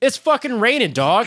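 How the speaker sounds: very high-pitched, shrill yell. Retelling a drunken quarrel outside a tent, imitating someone yelling back. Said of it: "the other guy yells back".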